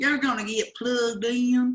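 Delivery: thick, real country southern drawl. Repeating a line to the audience to show how a southern drawl comes out. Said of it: "my southern drawl really comes out".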